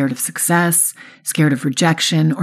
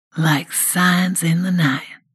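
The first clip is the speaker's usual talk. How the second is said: seductive, slow, stretched-out drawl. Jake answers the narrator's thanks, sexy drawl. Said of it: "he says with his sexy drawl".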